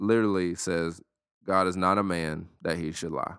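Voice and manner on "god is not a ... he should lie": ordinary delivery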